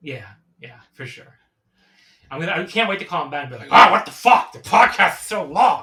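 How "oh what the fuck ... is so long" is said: very loud, high dad-style voice outburst. Imitating a father's reaction to a long podcast: imitating dad's voice. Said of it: "that's the kind of voice my dad gives".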